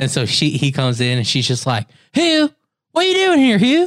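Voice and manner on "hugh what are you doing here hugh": high Southern belle voice. Retelling a scene they watched, the speaker quotes the wife to her husband: Southern belle voice. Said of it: "like that Southern belle".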